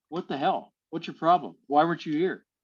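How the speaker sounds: normal talking voice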